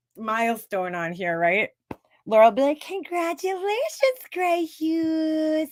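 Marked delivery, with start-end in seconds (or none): 2.8-5.7 put-on very high, sweet, babyish little voice. Imagining her next congratulations to Grey Hughes, the speaker does Laura's little baby voice. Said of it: "in her little baby voice".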